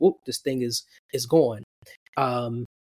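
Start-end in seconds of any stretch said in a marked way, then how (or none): none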